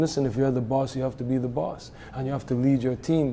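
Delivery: ordinary talk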